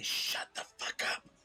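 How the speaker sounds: quiet, hushed voice, said under the breath. Speaking in character to enemies who are waking up: said quietly. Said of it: "I'm going to quietly say".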